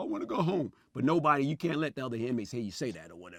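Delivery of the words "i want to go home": high, weepy, put-on little girl boo-hooing. Retelling nights alone in a jail cell: imitating own past crying. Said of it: "I'm crying like a little girl".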